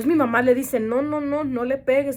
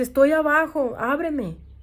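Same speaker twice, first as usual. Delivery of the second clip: scared, tearful crying mixed with anger; 3 semitones higher than usual. Retelling a brother's call from downstairs, imitating a scared, crying, angry voice. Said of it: "como asustado, como, ah, llorando, enojado".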